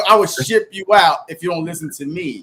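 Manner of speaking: usual speaking voice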